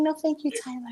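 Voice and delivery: high, soft, squeaky voice. Guessing how Janet really said it, in a Janet high squeaky voice. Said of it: "she got that little high squeaky voice".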